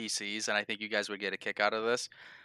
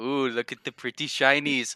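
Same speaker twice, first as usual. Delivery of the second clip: put-on coaxing, teasing, taunting tone; 3 semitones higher than usual. Retelling how the DM taunted the players in their game, mimicking the DM's taunt. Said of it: "that was the DM taunting you".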